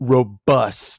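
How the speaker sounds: sultry, sexy, suggestive delivery. Listing words that sound sexual, reading the first one; saying it suggestively. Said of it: "Why you gotta say it like that though? Sounds pretty sexual".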